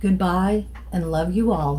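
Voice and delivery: plain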